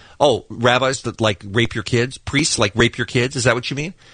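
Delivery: ordinary delivery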